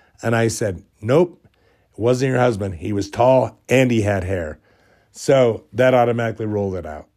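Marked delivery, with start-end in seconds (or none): none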